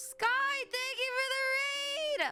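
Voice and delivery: voice cracking. Speaker thanks someone for the raid, voice cracking. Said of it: "my voice cracked!".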